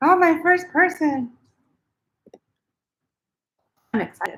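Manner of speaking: talking through a mouthful. Greeting the first person to join while still eating, talking with mouth full. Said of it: "Excuse me, just eating".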